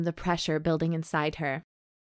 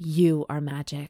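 voice growing gradually rougher; 3 semitones lower than usual. Reading a romance novel aloud for laughs: increasingly roughened voice. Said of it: "In an increasingly roughened voice".

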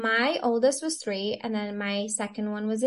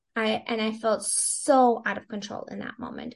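usual speaking voice

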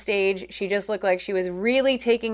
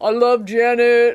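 big, loud, booming voice; 2 semitones higher, 6 dB louder than usual. Retelling what he said near the end of Janet's show: big Vin Diesel voice. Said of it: "in the big Vin Diesel voice".

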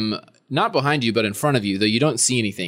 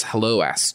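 very low voice, whispering close to the ear. A narrator voices an unseen presence greeting Aster, in a very low, whispering voice. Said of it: "very low sort of voice, almost as if somebody's whispering directly into your ear".

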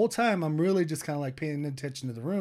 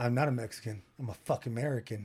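put-on tough guy voice, thuggish; 4 semitones lower, 5 dB quieter than usual. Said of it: "All thuggish".

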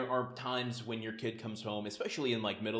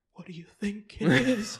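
put-on very high, very loud, quavering terrified cry; 10 semitones higher, 10 dB louder than usual. Retelling how a line was delivered with genuine terror: imitating Brad's trembling voice. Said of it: "voice trembles when he's like".

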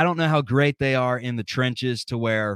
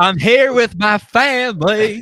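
put-on country twang, higher and louder; 9 semitones higher, 8 dB louder than usual. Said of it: "he got that country twang".

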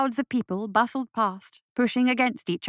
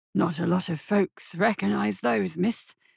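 put-on wheezy, raspy voice. Narrator reads the shopkeeper's reply to Isabel, wheezing rasp. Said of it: "he said in a wheezing rasp".

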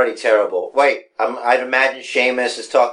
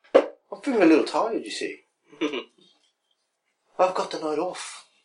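bad put-on Irish accent, higher and quieter; 5 semitones higher, 8 dB quieter than usual. Mocking a wrestler's excuses for avoiding fights: horrible put-on Irish accent as Sheamus. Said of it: "My accent is horrible".

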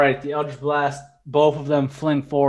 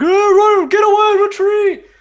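very high, climbing, drawn-out screaming yell; 8 dB louder than usual. Voicing fleeing bandits calling the retreat: bandits screaming. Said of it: "the yells and screaming of the bandits".

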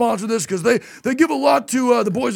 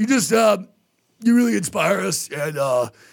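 mock choked-up speech, lower; 3 semitones lower than usual. Retelling a drunk man's emotional speech: imitating someone choked up. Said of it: "he gets choked up".

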